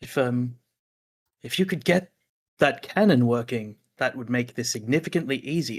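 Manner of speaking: stage whisper projected across. A character in a tabletop game stage whispers back to Asta: stage whisper. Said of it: "stage whispers back to Asta".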